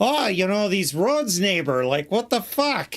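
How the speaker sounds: put-on Canadian accent. Mocking the conversation just heard: stereotypical Midwestern Canadian accent. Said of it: "most Midwestern, Michigan, stereotypical Canadian conversation".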